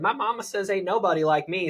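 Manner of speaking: put-on Southern gal accent. Demonstrating a quip he uses when talking with a Southern woman, Southern accent. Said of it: "I'll use a Southern accent and say".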